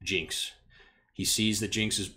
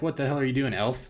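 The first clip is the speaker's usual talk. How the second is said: put-on shouting at a higher pitch; 4 semitones higher than usual. Voicing a fighter who dodges a spear and yells at an elf: yelling in character. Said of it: "just yells over the top of this guy".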